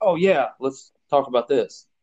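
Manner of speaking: plain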